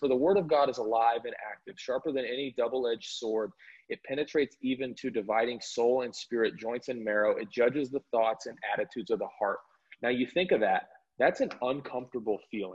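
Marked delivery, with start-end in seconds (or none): none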